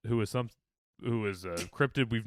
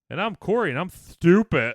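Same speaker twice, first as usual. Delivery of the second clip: mocking put-on voice, high and loud; 6 semitones higher, 6 dB louder than usual. Signing off the cast by imitating a co-host: imitating Corey. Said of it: "That's my impression of Corey".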